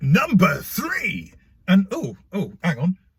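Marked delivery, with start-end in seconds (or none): 0.0-1.3 high, TV-style announcer voiceover delivery. Announce the next number in the list, sounding a little like the X Factor voiceover. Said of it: "that did sound a little bit like the voiceover from the X Factor".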